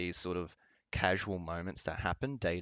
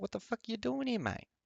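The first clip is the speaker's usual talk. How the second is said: very high voice with heavy Australian accent. Imagining people answering back in their own way: thick Aussie accent. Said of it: "speak to you with a thick Aussie accent and be like".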